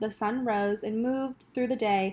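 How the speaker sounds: plain reading voice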